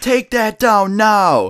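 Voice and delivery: put-on very slow, stretched-out, high shriek. Retelling how someone ran out in the store at them, imitating a shriek. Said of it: "screaming at us, like just shrieking".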